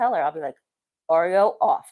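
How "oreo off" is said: put-on loud, stern, no-nonsense firm voice. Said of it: "when I get a stern voice".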